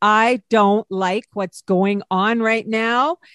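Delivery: firm stern voice. A mother recalls how she spoke to her little daughter: put-on stern voice. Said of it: "my stern voice was like".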